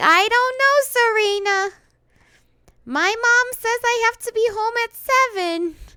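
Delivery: put-on very high, screechy, drawn-out Brooklyn accent. Speaker imitates the dubbed character Molly: Molly's Brooklyn accent. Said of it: "A Brooklyn accent. She'd be like".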